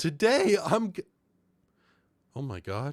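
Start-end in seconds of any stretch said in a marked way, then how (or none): 0.0-0.9 voice cracking, much higher pitch. Starting a video intro right after an outro, voice cracking. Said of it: "My voice just cracked".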